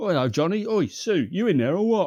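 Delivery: London Cockney voice. Retelling a man calling to the kids next door, in a Cockney accent. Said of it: "In his fucking Cockney accent".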